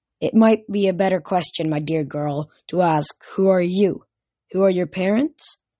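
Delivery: ordinary delivery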